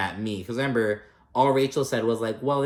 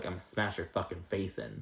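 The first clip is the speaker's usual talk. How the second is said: put-on menacing mutter, lower and quieter; 5 semitones lower, 12 dB quieter than usual. Retelling a threat said as another woman arrives: imitating Dolores muttering under her breath. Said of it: "under her breath, Dolores is like".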